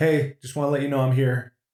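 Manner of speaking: put-on female voice. Retelling a voice heard while hallucinating at three AM: imitating a female voice. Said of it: "a voice goes, female voice".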